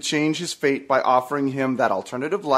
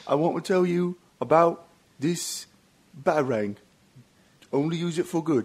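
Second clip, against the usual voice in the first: put-on English accent voice, quieter; 2 semitones higher, 4 dB quieter than usual. Doing a Michael Caine impression on request: Michael Caine impression. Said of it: "I think that's Carl Pilkington".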